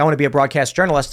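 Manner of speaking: ordinary talk, nothing marked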